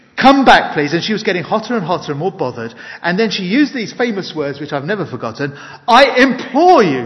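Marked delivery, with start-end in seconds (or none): 5.6-7.1 put-on high, loud shout in a Welsh accent. Speaker recalling a woman's famous words, retold shout in Welsh accent. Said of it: "she shouted. In her Welsh accent".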